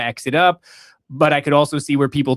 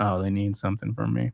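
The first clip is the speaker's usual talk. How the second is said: unbothered, offhand, couldn't-care-less tone; 7 semitones lower, 8 dB quieter than usual. Mocking how slowly Nancy responds: imitating Nancy, uncaring. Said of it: "She just goes".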